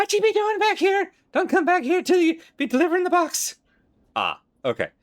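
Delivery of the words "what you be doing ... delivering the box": very high, loud screeching voice. Voicing a character who sees you approaching, in a high, screeching voice. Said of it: "In a high, screeching voice".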